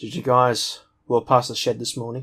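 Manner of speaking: plain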